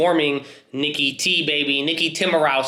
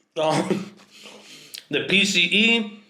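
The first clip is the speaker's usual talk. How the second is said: chewing while talking through a mouthful, chipmunk-style; 4 semitones higher than usual. Host answers his own pop quiz while eating, talking with mouth full. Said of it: "I'm eating, I'm talking like a chipmunk".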